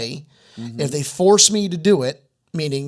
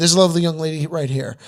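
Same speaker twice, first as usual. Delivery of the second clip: ordinary talk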